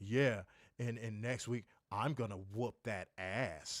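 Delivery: slow, suggestive, flirtatious come-hither tone. Retelling a wrestling promo line that sounded like coming on to him: imitating a flirtatious tone. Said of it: "it sounded like he was coming on to him".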